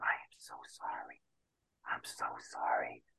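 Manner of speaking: very quiet, slow, drawn-out hushed whisper. Retelling how Marianne came over to apologize: imitating Marianne whispering. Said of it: "comes over and whispers in my ear".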